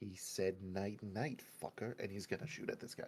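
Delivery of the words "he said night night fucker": quiet muttering under the breath. Voicing a character aiming at a guard: muttering under his breath. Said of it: "mutter under his breath".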